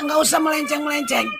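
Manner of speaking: angry, firm shouted outburst.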